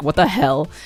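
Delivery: mock confused reaction. Retelling the car owner's reaction to hearing about the crack: imitating a confused reaction. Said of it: "but in a confused way".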